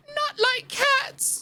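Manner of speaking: shrill, very high, passionate, impassioned mouse-like cry. Narrator reads the mouse's reply after a remark about cats: shrill, passionate cry. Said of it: "cried the mouse in a shrill, passionate voice".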